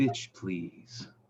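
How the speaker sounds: put-on metallic mechanical male voice. A game narrator voices a metal man speaking in the players' heads, metallic male voice. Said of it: "laughing from a metallic male voice".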